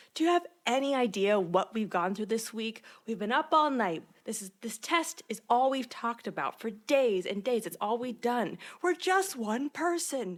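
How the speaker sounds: heated, angry complaining outburst, going off. Speaker recaps a scene where Lorelai confronts a man, imitating Lorelai going off. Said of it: "And then Lorelai just goes off".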